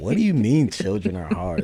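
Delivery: acted, affronted, indignant child's voice. Retelling a kid's reaction to hearing children are hard: imitating Ryan sounding offended. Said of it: "he looks so offended".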